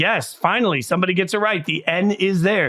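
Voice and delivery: ordinary talk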